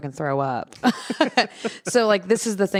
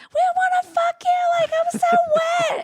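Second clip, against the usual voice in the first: acted, very high, shrill yelling girls' voices. Describing an event, the speaker imitates girls yelling at a man. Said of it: "and like yelling at him".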